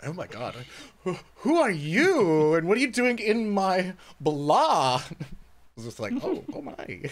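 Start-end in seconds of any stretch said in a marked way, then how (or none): 0.0-5.0 effeminate vampire voice, "you" drawn out. Giving Straw Hat a bonus point and acting out why, in an effeminate Dracula voice. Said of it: "the sort of effeminate Dracula".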